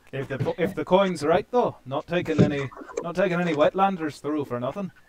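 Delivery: put-on loud Scottish accent. Voicing a desert guide answering a traveller: scottish accent. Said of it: "We're supposed to be Scottish".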